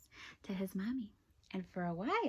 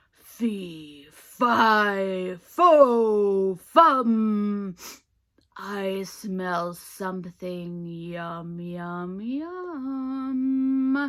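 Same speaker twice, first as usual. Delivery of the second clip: deep, gruff, angry, very loud roar, "yum" drawn out; 13 dB louder than usual. Narrator reading a story gives the giant's line in his castle: deep gruff angry yell. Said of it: "yelled out in his deep, dark, gruff sounding voice".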